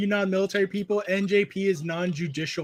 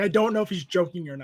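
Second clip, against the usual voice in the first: usual speaking voice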